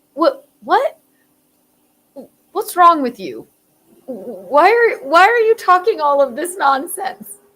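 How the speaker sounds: stunned cop voice. Retelling a cop stopping a speeding old man, acting out the cop: imitating a gobsmacked cop. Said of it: "The cop is gobsmacked".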